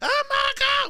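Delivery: mock shrieking scream, very high and loud. Retelling how a woman screamed at a bird watcher: imitating someone screaming.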